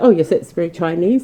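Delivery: ordinary delivery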